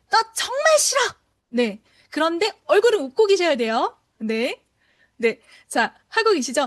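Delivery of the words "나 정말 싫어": very high, angry, annoyed irritated voice. Exercise where listeners smile while copying a line: angry, irritated voice. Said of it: "목소리는 화가 나고 짜증이 나야 됩니다. 그 목소리 이렇게 따라해보세요".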